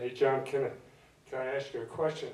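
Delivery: normal talking voice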